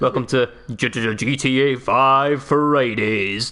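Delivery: radio presenter's on-air DJ voice. Opening the show after greeting the co-host, in a radio DJ voice. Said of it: "my radio D J voice is getting a little bit better".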